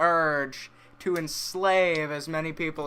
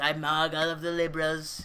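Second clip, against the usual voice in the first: put-on impression sounding like a little kid. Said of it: "Your Trump impression is so funny".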